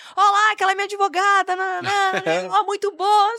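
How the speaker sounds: mock, high, excited calling-out shout. Retelling how a client once shouted in the shopping mall: imitating a client shouting. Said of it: "no shopping ele gritou assim".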